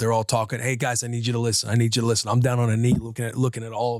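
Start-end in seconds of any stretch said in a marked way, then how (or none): 0.6-2.3 firm coach voice, calling out for attention. Retelling lining kids up for a sack race: imitating own coach speak. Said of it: "Getting in my coach speak with them".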